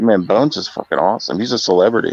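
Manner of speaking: usual speaking voice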